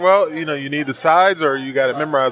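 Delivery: normal talking voice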